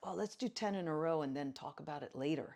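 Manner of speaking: cheery, easygoing, bright and upbeat tone. Retelling what gets said to students about talking later: retelling an upbeat line. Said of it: "I just say it in a really upbeat way".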